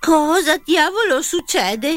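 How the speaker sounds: high-pitched, scared, startled shout. Reading a story, a character yells at the machine's answer; frightened shout. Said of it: "urlò spaventato Ronnie".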